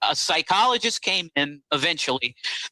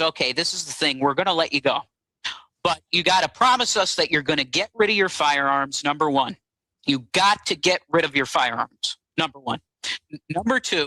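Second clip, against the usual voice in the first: ordinary talk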